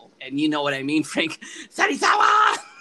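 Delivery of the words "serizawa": very high-pitched, loud shout. Saying a name the speaker cannot say without wanting to yell, yelled. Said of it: "I cannot say it without, like, wanting to yell".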